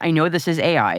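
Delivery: ordinary delivery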